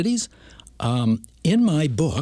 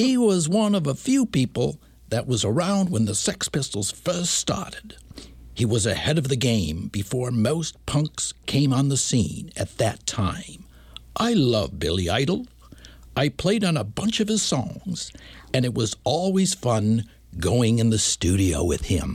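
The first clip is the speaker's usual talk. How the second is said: pretty good put-on English accent throughout. Speaking someone's words about billy idol, in a pretty good put-on english accent. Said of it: "That's pretty good".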